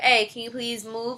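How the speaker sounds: put-on polite tone. Retelling asking people on the pool table to move: imitating own polite request. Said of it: "I'm being polite".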